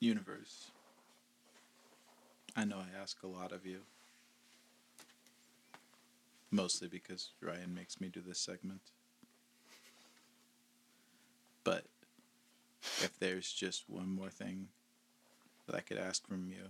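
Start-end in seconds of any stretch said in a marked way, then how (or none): none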